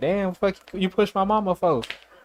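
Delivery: put-on high-pitched small boy's voice. Retelling a fight, quoting the pushed woman's young son: imitating a little kid. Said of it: "he's like a little ass kid".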